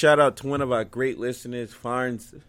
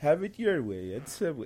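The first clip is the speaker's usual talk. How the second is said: put-on British accent like an advertisement announcer; 3 semitones higher, 9 dB quieter than usual. Retelling a Subway commercial seen at a London game, in the Subway commercial accent. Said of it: "had an accent".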